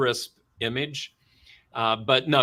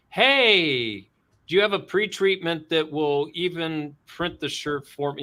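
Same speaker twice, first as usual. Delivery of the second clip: snide, sarcastic mock delivery; 4 semitones higher than usual. Imitating customers looking for a magic pre-treatment: sarcastic imitation of customers. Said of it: "I'm being really s-, you know, sarcastic".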